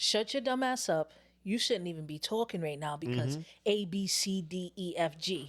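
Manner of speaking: raw, slow, blunt, no-holds-barred harsh tone. Acting out what they wish they could say, pretend raw blunt telling-off. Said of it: "Just raw. Rip the Band-Aid off".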